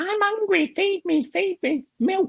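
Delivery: very high-pitched, slow talking toy doll voice. Recalling a child's doll that had a record in it: talking toy doll voice. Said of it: "it used to go".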